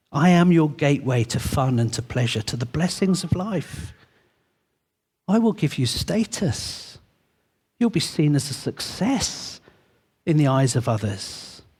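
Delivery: whispering voice. Voicing wealth as it speaks to the listeners: wealth whispering. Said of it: "the voice of wealth whispering".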